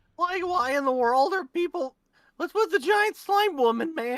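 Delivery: put-on squeaky, high-pitched cartoonish teenage voice. Pitching a character voice for a bit, the speaker lands on a Shaggy-like voice. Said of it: "that sounded more Shaggy".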